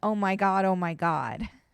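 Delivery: ordinary talk, nothing marked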